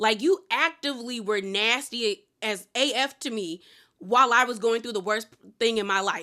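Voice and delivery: ordinary talk, nothing marked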